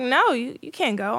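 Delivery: ordinary delivery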